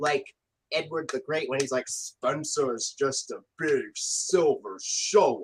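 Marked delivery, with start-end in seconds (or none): 1.9-5.4 deep, very slow, drawn-out low character voice. Quoting an episode line: Gordon voice. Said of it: "Gordon voice".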